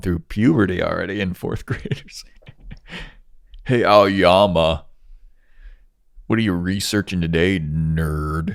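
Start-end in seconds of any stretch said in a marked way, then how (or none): 3.6-8.5 laid-back taunting surfer dude voice, nerd drawn out. Voicing the kid who keeps getting held back, addressing aoyama, surfer-dude voice. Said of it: "like a surfer dude".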